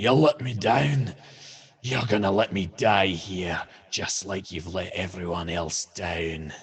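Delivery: bent, warped, distorted voice. Narrating a creature grabbing a player, then speaking in a warped version of Clyve's voice. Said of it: "a warped version of Clyve's voice".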